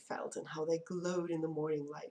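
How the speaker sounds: plain reading voice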